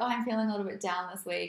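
ordinary talk, nothing marked

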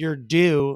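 loud, full-throated, sarcastic shout. Retelling yelling at a batter as he came up: imitating a loud sarcastic yell. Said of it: "as loud as I can".

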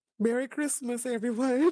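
very high, floating diva voice. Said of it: "Is that your Christmas voice?".

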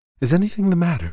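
out of breath, breathless, voice pitched very high. Narrator reads an old lady's question to a visitor, breathless. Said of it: "she asked, breathlessly".

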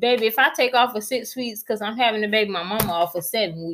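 ordinary talk

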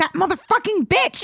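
hostile, aggressive. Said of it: "it was very aggressive".

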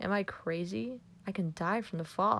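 usual speaking voice

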